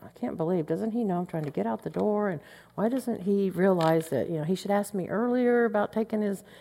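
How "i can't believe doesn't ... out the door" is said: mutter under breath, much quieter. The speaker re-enacts what they said about him, retelling muttering under breath. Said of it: "but under my breath".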